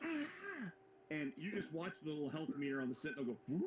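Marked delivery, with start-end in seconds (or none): 0.0-0.7 sudden, high-pitched yell. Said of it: "when I yell".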